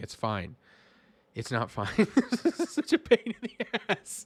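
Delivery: talking through laughter, pitched high. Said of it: "I'm laughing".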